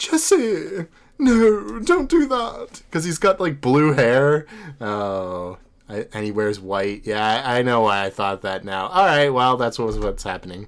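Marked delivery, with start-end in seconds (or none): 0.0-2.8 very high pitch, very slow, stretched-out anime character voice. Explaining which voice was used: James from Pokemon voice. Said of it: "it's James from Pokemon".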